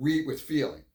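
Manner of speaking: ordinary delivery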